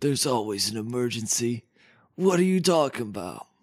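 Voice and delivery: deep put-on voice. Playing the Hero House answering a phone call: Dylan Sprouse impression.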